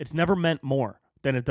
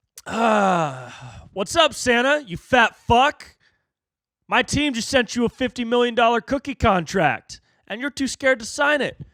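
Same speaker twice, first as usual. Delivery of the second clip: put-on cocky influencer voice, higher and louder; 9 semitones higher, 5 dB louder than usual. Mocking a YouTuber's challenge video with a cocky Jake Paul impression. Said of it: "a Jake Paul impression".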